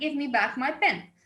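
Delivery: ordinary delivery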